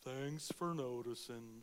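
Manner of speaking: low, gloomy, self-pitying, woe-is-me storybook donkey voice. Describing self-focused people, speaking as Eeyore: Eeyore voice. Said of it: "that Eeyore complex of".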